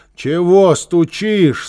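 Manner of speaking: drowsy, sleepy, half-asleep voice. Woken by pounding at her door, the neighbor asks in a sleepy voice. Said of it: "сонным голосом спросила она".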